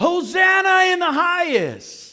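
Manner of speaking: high, slow, crowd-like cheering shout. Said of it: "were the ones who would cheer".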